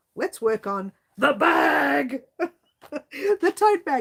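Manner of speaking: sudden, abrupt, high-pitched blurted yell. Speaking to the channel's viewers about this week's project, yelling. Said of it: "Did I yell? I'm sorry".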